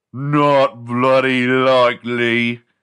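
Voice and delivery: put-on British accent. Quoting a line as a joke, in an imitation british accent. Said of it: "for doing a British accent. ... and then I just tried to imitate it".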